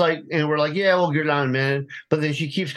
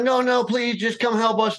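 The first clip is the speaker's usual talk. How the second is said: put-on desperate begging, higher pitch; 7 semitones higher than usual. Retelling the speaker's girlfriend begging police on the phone to come help; imitating a desperate plea. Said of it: "girlfriend begs police not to hang up".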